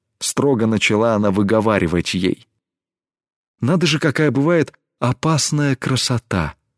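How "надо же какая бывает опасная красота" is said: amazed, astonished whisper, higher pitch. Warned by her companion, Tesme answers in an astonished whisper. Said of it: "Пораженно прошептала Тесме".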